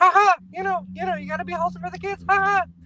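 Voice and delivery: very high, tiny cartoon mouse voice. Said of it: "Mickey Mouse is like".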